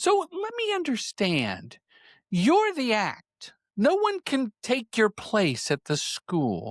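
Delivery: slow, swooping, high sing-song voice. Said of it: "and he talks like this".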